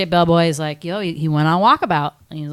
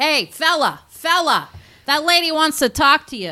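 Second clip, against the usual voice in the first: put-on speech with a Long Island accent; 10 semitones higher than usual. Acting out a guy in a yellow construction hat passing a message along, in a Long Island accent. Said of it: "like Long Island accent".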